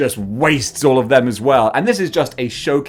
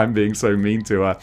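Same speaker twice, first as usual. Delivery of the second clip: usual speaking voice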